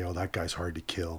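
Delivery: ordinary delivery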